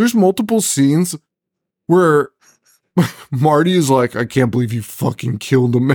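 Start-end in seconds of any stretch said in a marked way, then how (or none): 4.2-6.0 put-on upset outburst. Recapping a film's scenes, the speaker acts out Marty's outburst, imitating upset Marty. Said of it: "Speaking of being upset".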